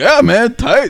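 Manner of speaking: high, loud, mock hyped-up voice.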